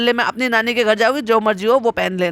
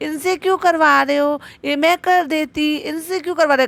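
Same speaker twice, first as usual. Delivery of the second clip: high, mocking put-on babyish whine; 6 semitones higher than usual. Mocking someone who asks why the guest is doing the cooking, baby voice. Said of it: "तुम्हें baby voice निकाल कर".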